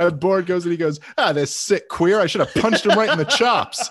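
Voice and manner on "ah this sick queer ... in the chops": pitched-up 1930s movie tough-guy voice. Retelling what Ron Paul said about Borat: imitating Ron Paul as 1930s tough guy. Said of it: "talking like, like, thirties tough guy".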